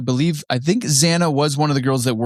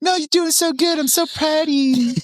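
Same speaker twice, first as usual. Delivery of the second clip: tiny, very high little angel voice. Acting out a little angel on the shoulder, praising: little angel voice. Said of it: "that's a little Jamie Angel".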